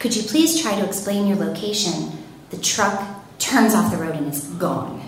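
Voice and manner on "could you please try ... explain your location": ordinary talk, nothing marked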